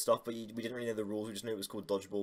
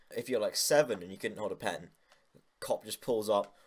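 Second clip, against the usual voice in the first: ordinary talk, nothing marked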